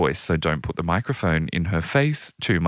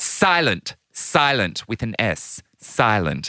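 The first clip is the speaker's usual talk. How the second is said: put-on sour, curt voice, higher; 4 semitones higher than usual. Retelling a televised team interview, sour Princess Anne impression. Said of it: "who just looks completely sour".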